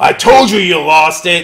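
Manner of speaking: loud barking shout. Voicing the leader of the group, shouting: voice of group's leader. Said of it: "and he's like".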